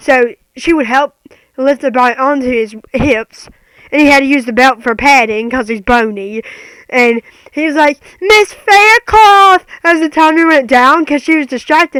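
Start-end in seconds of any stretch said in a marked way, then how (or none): 8.2-9.6 put-on scream, higher and louder. Retelling how he called for Miss Faircloth over music: imitating someone screaming a name. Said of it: "he had to scream Miss Faircloth's name over the music".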